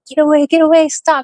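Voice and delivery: put-on high, urgent shouting. Retelling being trapped in a nightmare: imitating yelling.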